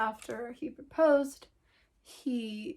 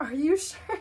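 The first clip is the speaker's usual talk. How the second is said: mock half laughing, half crying; 3 semitones higher, 4 dB louder than usual. Retelling own reply to a marriage proposal: retelling own laughing and crying. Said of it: "I was laughing, crying".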